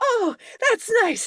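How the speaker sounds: put-on excitement and support. Retelling the wife's reply about the show, imitating put-on excitement and support. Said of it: "excited and supportive".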